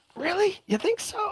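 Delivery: very high, excited, high-energy delivery.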